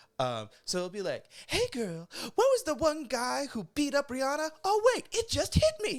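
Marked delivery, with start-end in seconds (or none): 1.5-6.0 very high, loud, projected stage voice. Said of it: "That's [name]'s like stage voice".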